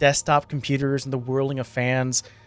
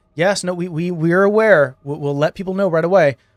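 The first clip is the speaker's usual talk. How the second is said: bewildered, confused delivery with raised voice; 4 semitones higher, 6 dB louder than usual. Voicing officers answering ringing phones in a chaotic station: confused police officers on phones. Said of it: "the confused officers are currently going".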